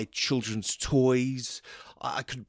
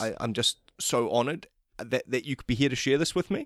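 ordinary talk

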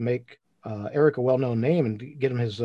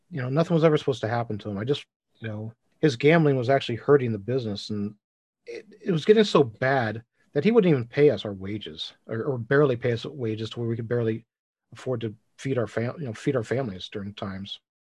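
usual speaking voice

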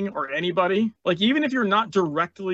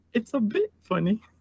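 clumsy, bad attempt at a cartoon piglet voice; 4 semitones higher than usual. The speaker quotes their kids, in an attempted Peppa Pig voice. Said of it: "as my kids would say in a Peppa Pig voice".

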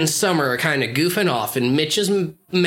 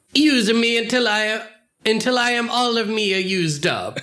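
pitched-up Italian-American accent; 6 semitones higher than usual. Asked to do an impersonation with a given line, say it in a Guido accent. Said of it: "please say uh, this in a Guido accent".

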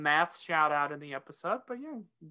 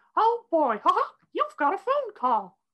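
very high, loud, swooping sing-song novelty-phone voice; 13 semitones higher, 6 dB louder than usual. Retelling what the Mickey Mouse phone said when it rang: Mickey Mouse voice. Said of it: "a phone that was shaped like Mickey Mouse".

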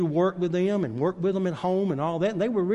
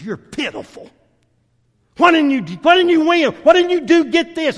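play-acted, very loud, harsh berating yell, rising pitch; 10 semitones higher, 10 dB louder than usual. Retelling how a father scolded his son after wrestling: imitating a father berating his son. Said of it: "gave him the worst chewing out".

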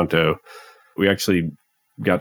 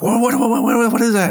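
mock very high, frantic, rattled-off freakout; 4 dB louder than usual. Retelling the moment a last breaker killed the noise: imitating own freaking out. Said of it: "I start freaking out".

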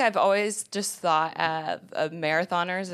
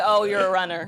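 ordinary talk

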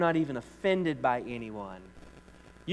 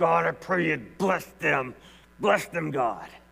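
forced through clenched teeth, rough edge; 2 semitones higher, 4 dB louder than usual. Showing how to pray a blessing on others, through gritted teeth. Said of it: "you got to pray it through gritted teeth".

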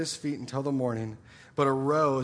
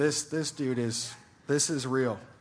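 ordinary talk, nothing marked

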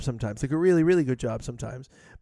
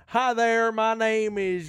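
theatrical put-on Southern accent, pitched up; 8 semitones higher than usual. Mocking a performer's many funny voices, the speaker puts on a southern accent. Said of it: "I'm doing the southern".

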